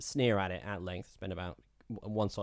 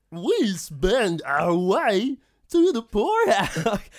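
exaggerated comical hillbilly, shrill, swooping, very loud; 12 semitones higher, 13 dB louder than usual. Repeating a quote when asked for more: exaggerated comical hillbilly voice. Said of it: "I was already at 125% there".

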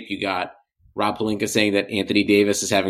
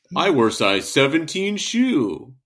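animated, high, swooping, up-and-down sing-song voice; 6 semitones higher than usual. Doing an impression of another speaker: Benner impression. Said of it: "Whenever [name] does an impression of me".

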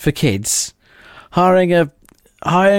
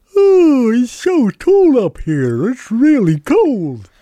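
sing-song, high, swooping talking-giraffe voice; 6 semitones higher than usual. Asked to do another talking animal, talking giraffe voice.

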